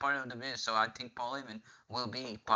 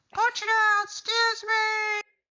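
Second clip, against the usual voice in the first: very high, shrill, very loud scream; 10 dB louder than usual. Imagining Liv Morgan screaming on the mic: imitating Liv Morgan screaming. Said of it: "I can imagine her screaming on the mic with her terrible voice".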